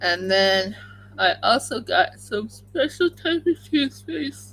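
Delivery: talking through a yawn. Describing a dental care routine, yawning while talking. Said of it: "I'm still yawning".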